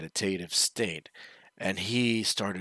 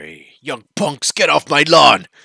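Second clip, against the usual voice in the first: put-on very loud, booming, rising old man's yell; 7 semitones higher, 17 dB louder than usual. Retelling a story where the old man yells at her: imitating an old man yelling. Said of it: "he starts yelling at her".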